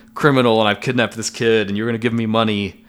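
normal talking voice

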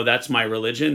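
ordinary talk

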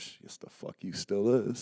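low, cool, level voice. Retelling a remark from someone there thirty years: imitating someone saying it low and cool. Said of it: "he say it real low, real cool".

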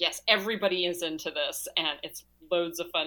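plain

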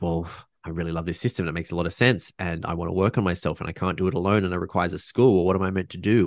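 ordinary delivery

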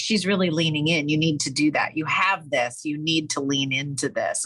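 plain

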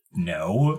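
curt, brushing-off, dismissive short reply. Voicing a cloaked figure answering the party: dismissive no. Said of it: "they kind of seemed really dismissive".

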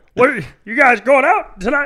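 very loud, very high belted casual call. Showing another speaker an impression being practiced: John C. Reilly impression. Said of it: "I've been trying to do John C. Reilly".

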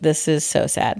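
plain

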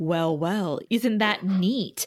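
put-on charming voice. Retelling Spike's reply to a Watcher: Spike charming voice. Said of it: "he puts on his charm".

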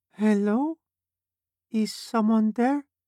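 tiny, squeaky, very high mouse-like voice. A woman entering the room interrupts the others, calling out in a mouse-like voice. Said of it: "A mouse-like voice interrupted them".

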